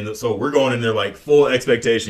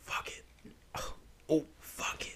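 very soft, very slow, hushed whisper; 5 semitones higher, 20 dB quieter than usual. Retelling what she whispered during a movie: imitating her whisper. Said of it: "whispers to me while we're watching".

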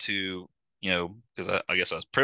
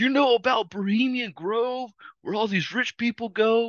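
very high, screeching, screaming outburst. Retelling how a man suddenly screamed across the aisles: retelling a scream. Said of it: "he's like screaming across the aisles".

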